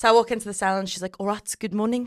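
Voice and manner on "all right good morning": put-on South African accent. Retelling how a South African woman greeted the speaker at the salon: South African accent. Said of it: "I'm gonna try and do her accent".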